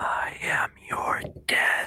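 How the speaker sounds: hushed, airy, breathy whisper. Recreating a voice that is heard inside your own head: breathy whisper. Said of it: "this breathy, like, whisper".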